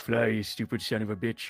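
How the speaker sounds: whispered in an acted voice. Voicing a character alone on deck as the ship leaves: whispering in character. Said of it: "and I whisper to".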